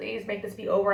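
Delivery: tearful, pleading tone. Retelling own past plea while stuck at a school desk: imitating a tearful plea. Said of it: "And I'm just in tears".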